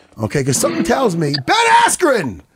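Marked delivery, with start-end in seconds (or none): 1.5-2.3 shout pitched very high. Calling a guest onto the show by name: yelling. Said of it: "Sorry to yell".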